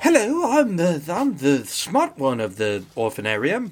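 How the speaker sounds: sing-song, drawn-out, slow voice with swooping pitch. Acting out an adopted girl introducing herself, Oliver Twist orphan voice. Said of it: "Oliver Twisted it, where she was like".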